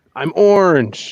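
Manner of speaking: play-acted, high-pitched scream. Telling the other speaker how they always imitate him, imitating someone screaming. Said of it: "You always scream that".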